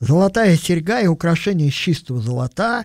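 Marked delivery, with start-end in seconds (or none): 2.2-2.9 stress slipped onto the wrong syllable in золота. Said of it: "ударение путаю".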